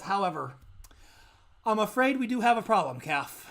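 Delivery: demon voice sighing heavily. A demon sitting at his desk addresses Calf: heavy sigh before speaking. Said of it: "demon who talked to you before. And Okay. he's he's sitting at his desk and he's got files in front of him and he's he's tapping his fingers together. / he's he's sitting at his desk and he's got file".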